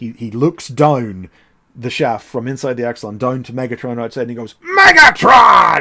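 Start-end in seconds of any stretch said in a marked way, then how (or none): 4.6-5.8 very loud, high, raw, rasping roaring shout. Retelling a scene where Rhinox looks down the shaft: imitating Rhinox roaring. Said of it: "you hear Rhinox roar".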